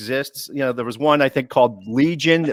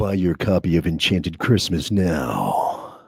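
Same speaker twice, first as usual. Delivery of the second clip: very deep, low, sultry announcer voiceover; 8 semitones lower, 4 dB quieter than usual. Asked by the hosts to let them hear it, the man hired for his voice: deep sexy voiceover voice. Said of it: "deepest, sexiest, beautiful, pornographic voiceover voice".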